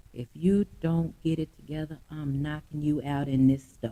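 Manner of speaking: most calming, soothing voice. Recounting grabbing someone by the t-shirt and warning him: re-enacting a calming voice. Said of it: "in the most calming voice, like I'm talking right now".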